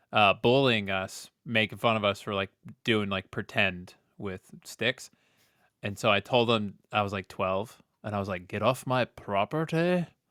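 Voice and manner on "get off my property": bad, slow, put-on tough-guy Scottish accent. Retelling telling a bully to leave: imitating own tough Scottish accent. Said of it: "I tried to do a Scottish accent and all, all tough".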